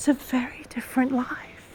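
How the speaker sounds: soft, breathy, hushed whisper.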